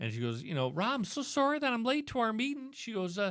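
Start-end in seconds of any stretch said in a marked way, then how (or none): 0.4-2.7 put-on pitched-up Texas accent. Speaker quotes a woman who called him on Skype, imitating a Texas accent. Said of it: "she had a fantastic Texas ac- Texas accent".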